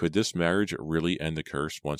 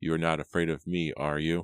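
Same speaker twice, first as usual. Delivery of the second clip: ordinary delivery, nothing marked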